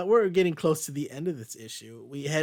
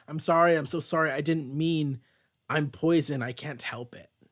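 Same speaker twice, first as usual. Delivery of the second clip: put-on scared child voice, much slower. Recapping an episode, the speaker acts out a kid's lines, imitating a scared kid. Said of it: "He seems scared".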